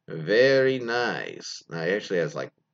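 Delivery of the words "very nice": rolled R in very, nice drawn out. Reading a submission, quoting a boyfriend's Borat impression with rolled R's. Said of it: "in his best Borat impression".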